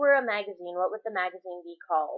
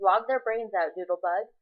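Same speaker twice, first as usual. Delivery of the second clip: ordinary talk, nothing marked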